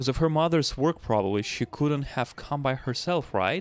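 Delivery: plain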